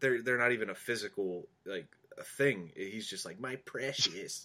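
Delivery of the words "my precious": hushed, soft, greedy, grasping creature voice. Speaker likening a GM hoarding draft picks to Gollum, Gollum voice. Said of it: "your Gollum was a little bit better".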